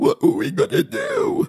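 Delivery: wheezing, phlegm-clogged, very high voice. The woman, just whacked on the back by her son, speaks: wheezing, phlegmy voice. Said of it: "wheezed the woman in a phlegmy voice".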